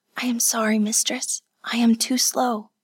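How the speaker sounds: soft and out of breath. A servant girl kneeling outside the screen apologizes to her mistress, breathless and soft. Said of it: "A breathless voice called softly".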